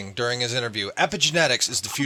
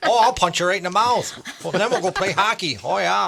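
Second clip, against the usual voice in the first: higher-pitched put-on Minnesota accent; 6 semitones higher, 3 dB louder than usual. Imitating a caller as a Minnesota hockey player: Minnesota accent. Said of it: "I just love that accent. Minnesota".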